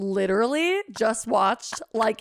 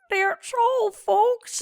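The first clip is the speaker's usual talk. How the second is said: put-on puppet frog voice; 11 semitones higher than usual. Repeating the saying in a Kermit the Frog voice. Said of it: "not a terrible Kermit".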